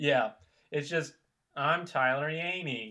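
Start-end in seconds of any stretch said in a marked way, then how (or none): 1.5-2.9 mock bored, unenthused, flat voice. Mocking how another speaker introduced himself: imitating Tyler's unenthused introduction. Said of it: "you sound so unenthralled with your introduction".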